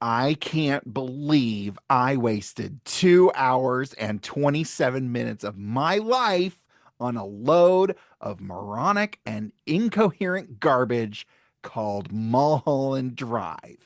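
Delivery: snippy, catty voice, put on. Reading a quote aloud at the other speaker's request, in a put-on snippy voice. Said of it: "read it in your best snippy little bitch voice".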